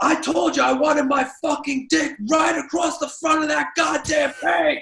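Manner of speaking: furious, angry yell, pitched very high. Retelling what someone was heard yelling at somebody on the phone: imitating someone yelling angrily. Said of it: "heard Evan yelling".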